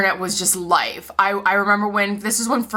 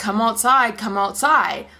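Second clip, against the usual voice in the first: ordinary talk, nothing marked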